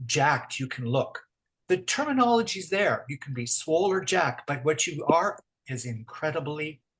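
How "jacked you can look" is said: ordinary talk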